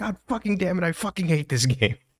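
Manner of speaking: raging, furious, angry scream, very high pitched. Retelling a friend raging at a game late at night: imitating someone screaming angrily. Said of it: "screaming in his house".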